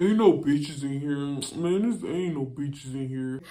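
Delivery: low, slow, barely voiced grumbling mumble. Walking ahead, the speaker retells what Fraud mutters behind him: imitating Fraud mumbling. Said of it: "Like he just mumbling".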